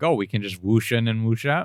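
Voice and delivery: ordinary delivery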